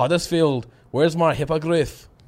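unconvincing, bad, put-on Scottish accent. Trying the line again after being told it sounded english, bad scottish accent. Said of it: "I'll do it in Scottish now".

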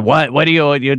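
put-on barky New York voice. Retelling the owner answering the buzzer, in a barky New York voice. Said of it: "classic New York character with sort of like a barky voice".

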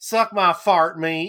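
put-on effeminate Southern gentleman voice, very loud. Showing how to deliver their own catchphrase, like an effeminate southern gentleman voice. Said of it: "say it like an effeminate southern gentleman".

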